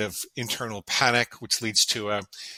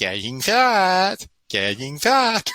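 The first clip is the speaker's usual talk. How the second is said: put-on very slow, high, sing-song baby talk, "fat" stretched; 8 semitones higher, 5 dB louder than usual. Retelling what the father said while grabbing the stomach: imitating baby talk. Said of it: "he would say it in baby talk".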